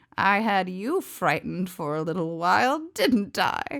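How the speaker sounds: sweet, smoky voice. Reading a story aloud, the witch taunting the unicorn: sweet, smoky voice. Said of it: "she said in her sweet, smoky voice".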